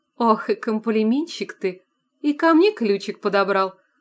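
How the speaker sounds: playful, teasing, mocking tone. A narrator reads a woman answering a man's compliment, mockingly. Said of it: "насмешливо спросила Анфиса".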